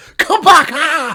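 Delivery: very loud, very high, frantic panicked shout. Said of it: "hear me shout".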